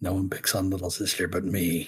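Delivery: said softly under the breath. Voicing a character after striking back in battle: said softly under his breath. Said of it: "softly, I kinda almost under his breath".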